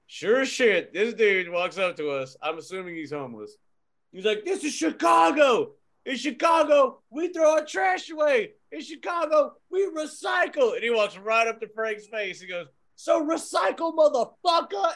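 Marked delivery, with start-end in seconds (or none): 4.5-15.0 mock screamed rant, man's voice, higher. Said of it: "screaming downtown".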